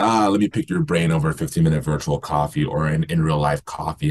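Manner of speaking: ordinary talk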